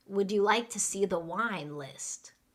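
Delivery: ordinary talk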